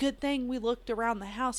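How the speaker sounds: ordinary delivery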